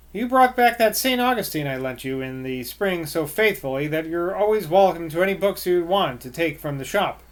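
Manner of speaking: ordinary delivery, nothing marked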